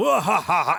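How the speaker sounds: high evil villain laugh. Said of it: "doing his, you know, evil laugh".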